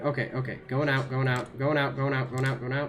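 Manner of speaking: fast, rattled-off, panicked repetition. Getting lost in the tunnels while playing, trying to get out: panicking. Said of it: "oh god, I'm panicking".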